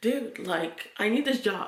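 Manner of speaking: earnest, pleading, begging voice. Retelling pleading with a manager for a job: imitating own begging. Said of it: "I was begging the manager".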